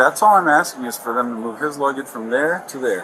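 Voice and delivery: plain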